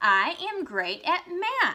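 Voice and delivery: loud, high, excited, drawn-out sing-song. Teaching exclamation marks, demonstrating the example sentence said with excitement. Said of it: "saying it with excitement in my voice".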